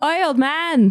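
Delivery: very high-pitched calling shout. Calling to an old man up the stairs: yelling up the stairs. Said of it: "she's gonna yell up the stairs".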